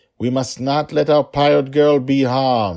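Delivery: voice climbing to a peak, very loud. A prisoner addresses fellow prisoners down the corridor, in a loud, rising voice. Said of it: "Fellow prisoners, [name]'s voice rose and echoed through the corridor. / [name] said. / [name], / he spoke loudly, / [name]'s voice rose and echoed through the corridor. / My name is [name]".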